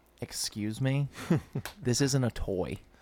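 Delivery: whispered, snooty dog voice.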